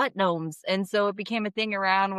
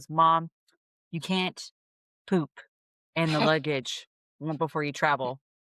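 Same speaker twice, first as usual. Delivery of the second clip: put-on grave, earnest voice, low and slow; 4 semitones lower than usual. Retelling what a daughter came up and said: imitating someone speaking very seriously. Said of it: "very seriously goes".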